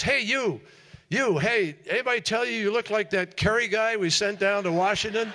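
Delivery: shrill, very high, loud hollering. Retelling how a man in the airport pointed and called out: imitating a man shouting. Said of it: "he points and he shouts and he says".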